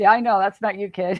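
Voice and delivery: put-on playful, teasing delivery. Retelling a dad's reply to his worried son: imitating a teasing dad. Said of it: "He was totally teasing him".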